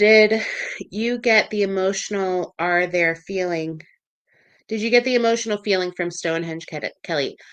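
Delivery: ordinary talk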